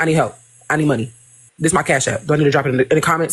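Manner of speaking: mock-dry, curt delivery. Retelling how a woman asked for help, the speaker imitates her dry, curt tone. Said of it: "Like it was just dry".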